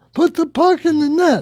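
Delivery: mock very high screaming yell. Imitating a fan at a hockey game: imitating a fan screaming. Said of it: "the ones who at hockey games scream out".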